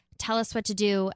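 plain

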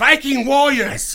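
mock weird English accent. Retelling telling wedding stories of Vikings: imitating own weird English accent. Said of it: "weird Eastern Bloc, but you're from England".

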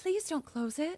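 put-on slipping into British accent. Acting out a ghost's plea while retelling a scene: put-on British accent. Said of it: "it started to come out like that".

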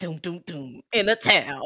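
slow movie trailer announcer voice. Praising the trailer voice in movie intros, the speaker does a movie trailer voice. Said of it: "that trailer voice is the best".

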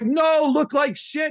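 high, slow, exasperated shout.

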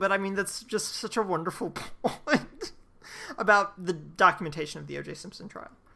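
words broken up by laughing throughout. Responding to the other speaker's point about documentation, laughing while talking. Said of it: "I'm sorry I'm laughing".

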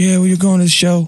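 creepy, terrible-sounding pop-star voice. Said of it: "that's a creepy voice".

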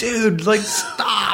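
very high-pitched, loud shout. Retelling telling a man cutting his arm to stop; reenacting own shout to stop. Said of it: "and I'm like".

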